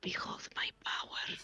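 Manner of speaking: stealthy whisper under the breath. Voicing Fran on a stealth mission, whispering in character. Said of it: "whispering, because this is a stealth mission".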